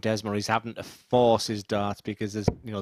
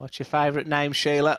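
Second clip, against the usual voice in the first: put-on clumsy, unconvincing Australian accent, pitched up; 5 semitones higher than usual. Retelling trying an accent on a man who wasn't impressed, bad aussie accent. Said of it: "I tried my Aussie accent on him".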